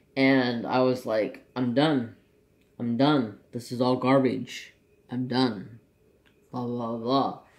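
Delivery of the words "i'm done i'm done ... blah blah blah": ordinary talk, nothing marked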